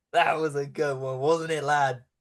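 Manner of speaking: snickering character voice. Voicing a figure at the window after guards leave: snickering character voice. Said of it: "the voice in the window kinda just start snickering".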